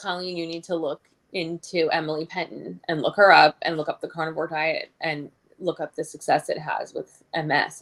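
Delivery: ordinary delivery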